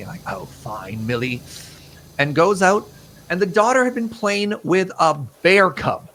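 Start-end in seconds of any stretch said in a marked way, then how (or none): 0.3-1.4 put-on gentle English accent. Retelling, as a parent, how the parent answered the daughter after she kept coming back, in an English accent. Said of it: "a part of my English accent for this whole thing".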